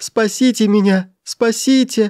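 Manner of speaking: very high, pitiful, plaintive terrified cry. Narrator voicing a young man told no one leaves, crying out plaintively in terror. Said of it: "жалобно закричал молодой человек голосом, в котором зазвенели ужас, мольба".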